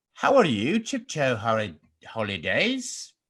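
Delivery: terrible put-on English accent with swooping pitch. Showing off an accent to the other speaker, trying a bad English accent. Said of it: "want to hear my English accent?".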